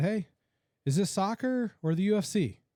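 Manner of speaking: high, drawn-out yell. Retelling a comment yelled at a soccer match: imitating own loud yell. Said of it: "and I yelled it really loud".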